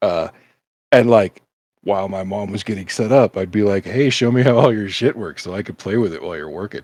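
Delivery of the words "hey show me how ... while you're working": ordinary delivery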